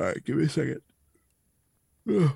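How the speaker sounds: speaking while yawning. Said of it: "sorry, I'm yawning".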